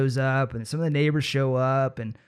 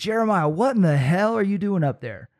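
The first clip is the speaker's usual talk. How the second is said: put-on, high, mild scolding yell; 5 semitones higher than usual. Retelling how mom yelled up at him in the tree: imitating mom yelling. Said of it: "starts yelling at me".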